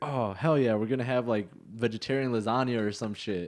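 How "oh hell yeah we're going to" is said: plain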